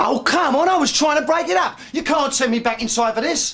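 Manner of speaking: shrill shouting, pitched very high. In a drama, a character answers someone asking about pressing charges, shouting. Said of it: "shouting at me isn't going to help".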